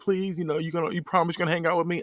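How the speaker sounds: put-on tearful, weepy voice, sobbing through the words. Retelling a movie scene where a character pleads: imitating someone crying.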